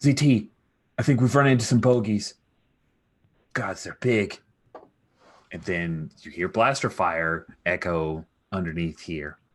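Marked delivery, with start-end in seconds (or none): 0.0-4.4 high, raised, anxious, worried call. Narrating the game, the speaker voices the corporal over comms, Pag's worried voice. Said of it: "worried voice of uh".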